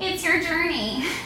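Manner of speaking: soft, whiny, mewling sarcastic tone. Retelling what they said from the therapist couch, mock sarcastic mewl. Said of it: "I sarcastically mewled from the therapist couch".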